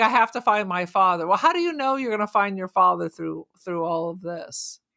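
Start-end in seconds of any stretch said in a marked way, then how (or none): none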